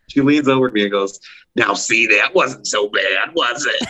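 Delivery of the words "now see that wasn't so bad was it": rough, smoky, raspy put-on voice. Retelling what a woman in the next seat said after a first movie: imitating a raspy voice. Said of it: "she had that raspy voice".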